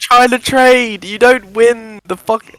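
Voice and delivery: heated, excited, high, worked-up outburst. Watching a player who keeps trying to trade: excited. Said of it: "the excitement in your voice".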